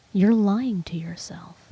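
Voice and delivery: imitated very quiet, calm speech. Retelling an ex's words in arguments: imitating someone getting really quiet. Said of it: "And he'd get really quiet".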